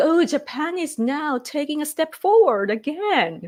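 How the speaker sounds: put-on condescending voice. Imitating an ambassador talking down to japan: imitating a condescending tone. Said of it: "condescending, is it the word, tone".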